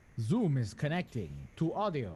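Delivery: vampire accent, very slow, swooping pitch. Announcing that Zoom is connecting to audio: Dracula accent. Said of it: "Why was that a Dracula accent?".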